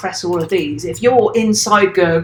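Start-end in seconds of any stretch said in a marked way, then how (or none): none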